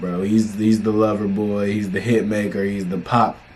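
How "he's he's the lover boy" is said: usual speaking voice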